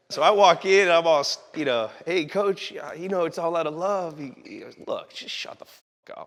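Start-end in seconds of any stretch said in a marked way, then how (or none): 4.8-6.2 breathy, hushed, blunt and dismissive. Retelling what the coach said when the speaker walked in: imitating the coach. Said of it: "Give me an impression of".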